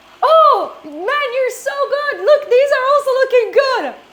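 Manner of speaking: put-on very high, loud, wasted drunken gushing. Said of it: "He was wasted".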